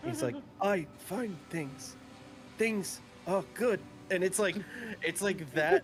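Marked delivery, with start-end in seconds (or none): 0.6-3.8 put-on very soft voice, higher, quieter, slower. Describing how a caller talks, imitating a really soft voice. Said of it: "had like a really soft voice".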